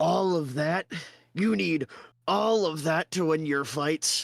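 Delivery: laughing put-on character voice. Voicing Krug mocking the heroes' many weapons: Krug laughing. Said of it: "Krug kinda laugh and he goes".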